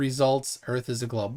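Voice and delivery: plain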